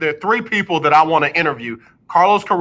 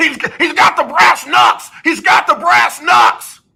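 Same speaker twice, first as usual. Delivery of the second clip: very high, loud, excited wrestling announcer voice; 11 semitones higher, 5 dB louder than usual. Recalling a Hall of Fame wrestling announcer's call, imitating a wrestling announcer. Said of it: "the big time announcer, Hall of Fame announcer".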